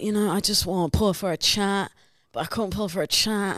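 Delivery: put-on Essex accent. Showing off the accent they say they're good at, Love Island accent. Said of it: "The Love Island accent".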